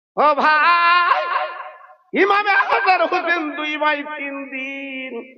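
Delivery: loud, slow, high-pitched, drawn-out call.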